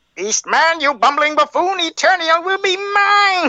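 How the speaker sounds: very high-pitched, sneering, villainous cartoon voice. Asked to do the cartoon villain voice again, doing the Skeletor voice. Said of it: "they want you to do the Skeletor voice again".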